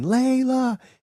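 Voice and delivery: shrill, very high-pitched scream.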